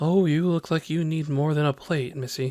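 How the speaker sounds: motherly voice. Voicing the tavern keeper offering food to a hungry player: sounding like a mom. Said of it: "you sound like a mom".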